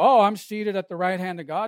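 ordinary talk

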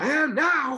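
distressed, very high-pitched and loud. Retelling a boxing promoter's reply after his fall: Don King impression. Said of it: "That was a pretty good Don King impersonation".

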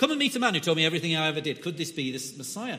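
put-on fast, loud northern English accent.

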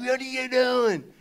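mock, high-pitched shouted yell. Retelling an encounter in traffic, imitating the other driver yelling at them. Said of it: "he's like yelling at me like".

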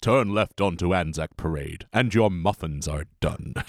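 put-on automated announcement voice. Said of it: "It's whatever James L. Jones tells him to do".

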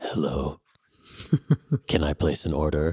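laid-back, mellow tone. Retelling phoning in a sandwich order after a massage, reenacting deep, mellow voice. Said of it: "I felt like my voice dropped like two octaves... And I was like so mellow".

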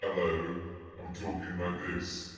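very hushed, low, throat-squeezed voice. Asked how a noise was recorded, the speaker demonstrates it live: squeezed-neck voice. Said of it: "You just squeeze your neck like that".

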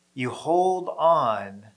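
hold on stressed and stretched out slowly.

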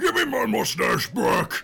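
high, raw, rough, swooping, enraged screaming. Voicing a character who screams at you in Goliath: screaming in Goliath. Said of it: "He's screaming at you in Goliath".

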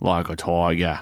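bad, put-on Australian accent. Joking about tight Tolex, repeating a phrase in a bad Australian accent. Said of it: "That's our shitty Australian accent".

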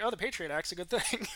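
normal talking voice

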